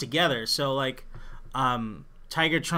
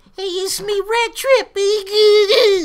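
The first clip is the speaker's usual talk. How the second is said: put-on shrill, loud, slow, high monotone, "baby" stretched out; 12 dB louder than usual. Showing how the character should sound: Rat Trap voice. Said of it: "it's more like".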